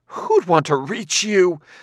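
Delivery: exaggerated overdone disgust, pitched very high. Narrating a woman's gasped reply to a man, in exaggerated disgust. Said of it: "She shuddered in exaggerated disgust".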